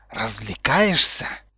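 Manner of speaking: low, furious, angry hissing voice. A professor roughly grabs a student by the shoulders from behind, hissing angrily. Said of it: "прошипел очень взрослый и очень злой Снейп".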